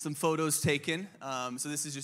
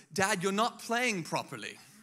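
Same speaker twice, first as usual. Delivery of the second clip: put-on high, swooping British accent, like a small child; 6 semitones higher, 3 dB louder than usual. A dad retells his three-year-old scolding him in a blanket fort, Sophie's little British accent. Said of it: "with this little British accent, she goes".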